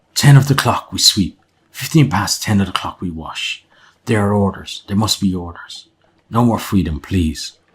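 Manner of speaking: hushed whisper. A narrator voices a man who flinches at the sight of the group, whispering. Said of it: "he whispers".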